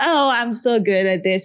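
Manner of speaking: ordinary talk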